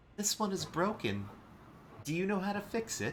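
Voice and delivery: very high, squeaky little gnome voice. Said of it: "gnomish voice".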